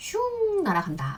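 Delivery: 슝 drawn out with relish, swooping high and slow.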